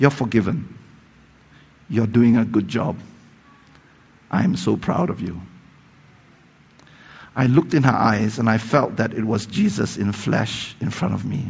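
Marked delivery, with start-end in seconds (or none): 0.0-5.4 very soft, quiet put-on voice. Speaker retells what a woman told them, imitating someone speaking softly. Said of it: "she's speaking so softly that you have to lean into her".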